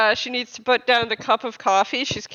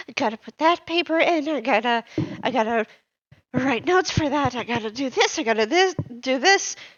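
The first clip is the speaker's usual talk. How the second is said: stammering, stuttery, stumbling over the words. Voicing a passing character muttering about tasks: stuttery voice. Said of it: "in this kind of stuttery, uh, voice".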